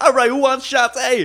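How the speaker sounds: shrill, blaring, very high, loud cartoon DJ hype voice. Retelling what the dj at dinner shouted: imitating the dj like a cartoon character. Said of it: "he's, like, a cartoon man".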